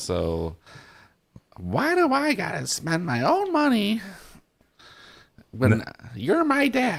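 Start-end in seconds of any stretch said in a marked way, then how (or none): 1.6-7.0 very high, swooping, very slow voice. Doing a quick impression of Lauren after being asked: imitating Lauren. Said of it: "give me a Lauren impression real quick".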